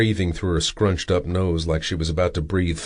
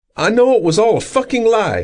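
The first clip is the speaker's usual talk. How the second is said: shrill, sharp, high, loud angry snap; 7 dB louder than usual. Reading a story, a girl answers her captor: snapping angrily. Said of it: "she snapped".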